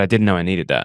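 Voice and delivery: ordinary talk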